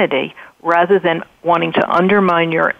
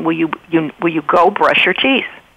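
put-on annoyed voice. Showing how a parent sounds asking a child to brush teeth: imitating an annoyed parent. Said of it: "a little annoyed vo-, voice".

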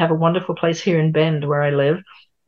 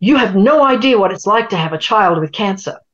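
play-acted, loud, angry outburst; 4 semitones higher, 5 dB louder than usual. Retelling a caller at a call center bursting out: imitating an angry outburst. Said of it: "he just burst out and said".

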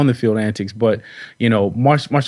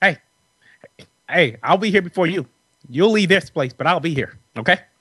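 stern, commanding, pitched-up lecturing tone; 6 semitones higher than usual. Telling a locker-room story about a longtime Bears figure, impression of a Bears veteran. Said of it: "Just like him".

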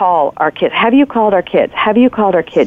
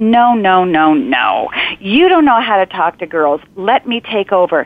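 haughty, lofty, superior know-it-all tone. Mom retelling how she interrupted the kids' dad, mock-haughty tone. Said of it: "interrupt him with this sort of haughty tone".

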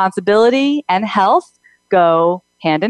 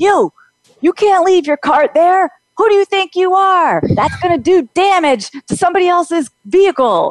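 put-on shrill hollering, very high; 9 semitones higher than usual. Retelling a woman in the next car shouting at the speaker, imitating her shouting. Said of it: "shouting at me. She's going".

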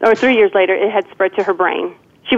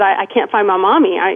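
tearful sobbing, stumbling over words, pleading tone. Retelling being lost in a store as a child: imitating own childhood crying. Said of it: "And I started crying".

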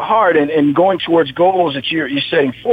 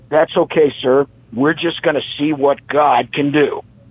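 firm, resolute, set-jawed voice. Retelling what Rich said when they could not confirm, do your Rich Austin voice. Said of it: "That's my Rich Austin voice".

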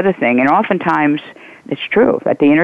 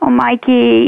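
put-on childish, high-pitched baby-talk voice; 9 semitones higher than usual. Acting out a woman batting her eyes at Mikey, in a baby voice. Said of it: "that kind of baby voice".

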